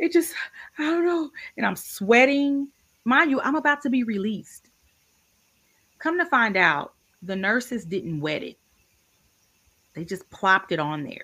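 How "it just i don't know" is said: mock crying, pitched way up, tearful and broken. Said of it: "I've never seen you cry like this".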